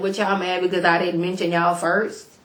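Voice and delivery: ordinary talk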